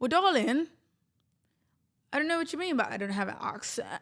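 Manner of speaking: high, strained voice like choking. Answering a viewer's comment, voice sounding like choking. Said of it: "that just sounded like I was, like, choking".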